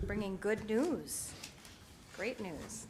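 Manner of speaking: soft, sarcastic, put-on cheerful enthusiasm. Introducing the yearly health insurance renewal to the group, sarcastic. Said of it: "I'm being sarcastic".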